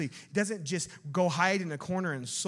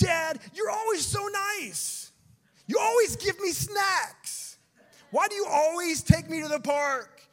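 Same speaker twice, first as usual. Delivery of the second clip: put-on loud, very high-pitched little-kid yelling voice; 12 semitones higher, 5 dB louder than usual. Comparing Jonah's complaint to a child's, imitating a child yelling at their dad. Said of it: "starts yelling at you".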